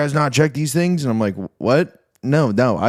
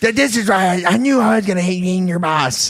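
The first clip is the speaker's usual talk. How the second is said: higher-pitched put-on voice, sounding annoyed; 7 semitones higher than usual. Imitating the boss complaining about the speaker: imitating Dom. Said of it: "that sounds just like Dom".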